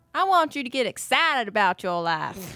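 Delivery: put-on Texan drawl. Answering a request for a word from Doctor Phil: Doctor Phil impression in Texan drawl. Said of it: "managing to do that in a Texan drawl".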